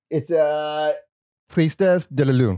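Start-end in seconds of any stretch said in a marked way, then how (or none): 1.5-2.5 attempted French accent and pronunciation. Reading a track title aloud: attempted French accent. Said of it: "I'm gonna try to say with, with the accent".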